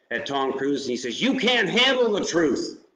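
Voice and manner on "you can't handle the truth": high-pitched, loud screaming. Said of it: "he screams at".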